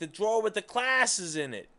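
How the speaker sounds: put-on high yell with slight New York accent. Explaining with an analogy, voicing the boss yelling back in a New York accent. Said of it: "He's got a little, uh, you know, New York accent".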